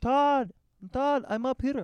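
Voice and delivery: put-on Russian accent. Retelling how a woman called down to him, imitating a Russian accent. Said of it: "I don't know why she has this accent".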